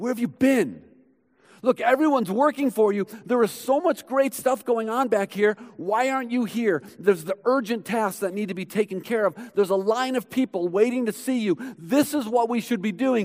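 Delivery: frantic, alarmed, panicked voice. Retelling how the disciples finally found Jesus, mock-panicked. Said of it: "you can almost hear the panic in their voice".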